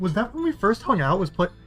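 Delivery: cracking, breaking voice. Speaker asking the others a question, with a voice crack. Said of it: "listen to that voice crack".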